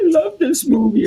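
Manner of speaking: put-on high, loud crying, sobbing through words. Retelling what a sister said while watching a movie: imitating someone crying. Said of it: "and she's crying".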